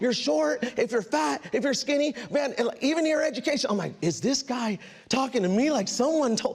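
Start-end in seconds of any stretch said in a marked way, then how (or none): none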